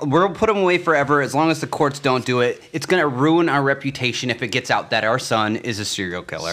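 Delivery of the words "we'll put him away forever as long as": usual speaking voice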